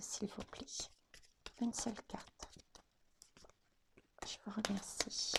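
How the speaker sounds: soft, hushed, unvoiced whisper.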